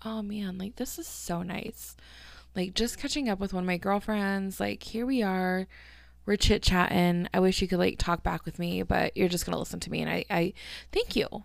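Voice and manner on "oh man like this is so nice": soft, relaxed breathing out. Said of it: "I'm breathing".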